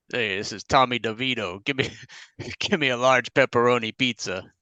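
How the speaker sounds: accent from New Jersey. A co-host, asked to show a New Jersey accent, does a Tommy DeVito New Jersey accent. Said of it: "Let me hear your New Jersey accent".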